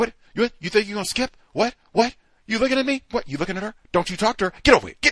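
play-acted aggressive, confrontational, hostile tone. Speaker recalls the new school staff's first day, imitating their aggressive scolding. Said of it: "they're aggressive with everybody".

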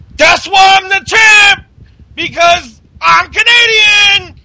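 piercing, high, loud yell. Recapping a match, Owens on top of Dolph, retelling Kevin Owens's yell. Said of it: "and he's yelling".

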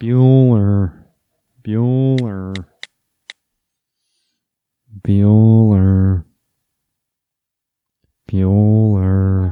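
very slow delivery, each word drawn out. Recalling the actor from Ferris Bueller: Ben Stein impression. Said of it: "Ben Stein".

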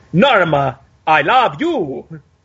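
very slow, drawn out, stress on unexpected words. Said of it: "he would always emphasize the wrong words".

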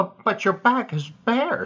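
halting, high, stammering, stuttered. Bill's father kneels bare-backed and asks Bill to whip him; Bill answers, stammering. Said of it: "stammered Bill".

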